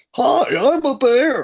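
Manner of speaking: very high, loud, goofy puppet bear voice. Explaining what voices a kids' show had heard all day, in a silly Muppety bear voice. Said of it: "heard Muppety voices like".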